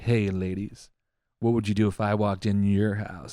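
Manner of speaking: mock cringy flirty come-on voice. Retelling how a guy talks into the camera: imitating a cringy flirty guy. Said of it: "most women find that cringy as shit".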